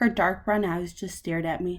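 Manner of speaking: plain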